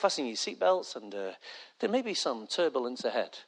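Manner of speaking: put-on nice, calm, soothing voice. Acting out the captain's announcement: imitating the captain's nice, calm voice. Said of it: "He says it in a real nice voice, like".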